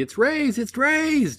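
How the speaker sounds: very high, shrill, loud shouting. Game narrator voicing two guardsmen running toward a player, yelling very loudly. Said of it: "yelling out very loudly".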